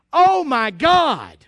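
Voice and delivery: cried out slowly and loudly.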